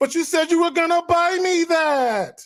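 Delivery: put-on very high, drawn-out, petulant childish whine. Imitating a man in a video as a petulant child: imitating a whining petulant child. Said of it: "He's like a petulant child".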